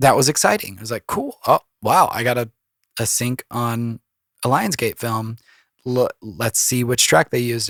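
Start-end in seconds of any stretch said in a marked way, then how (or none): none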